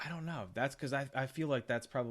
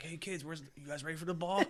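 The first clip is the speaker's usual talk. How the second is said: high-pitched, wired, sweaty-sounding rambling voice; 5 semitones higher than usual. Imagining a scene at a ball game, at the end of Goodfellas: imitating coked-up Ray Liotta. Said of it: "at the end of Goodfellas where he's all coked up".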